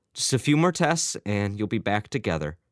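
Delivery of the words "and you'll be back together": plain reading voice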